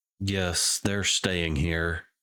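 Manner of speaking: tired, weary speech heaved out on big sigh. Retelling how a man answered a question, imitating his big sigh. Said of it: "He just kind of lets out a big sigh".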